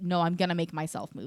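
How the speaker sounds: acted panicked, anxious tone. Retelling someone's thoughts while paralyzed in bed: imitating panicked thoughts. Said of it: "he's, like, panicking".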